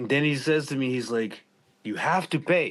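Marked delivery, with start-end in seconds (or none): 1.8-2.7 put-on insistent, demanding tone, high and pressing. Retelling a man insisting on payment, the speaker re-enacts a demanding voice. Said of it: "he's starting to demand".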